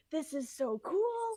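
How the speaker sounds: put-on, excited, hyped-up yelling scream, high-pitched. Speaker retells watching a fight scene and screaming at the tv, retelling excited screaming. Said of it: "Like I'm like screaming at the T V".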